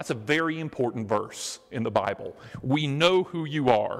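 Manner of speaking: plain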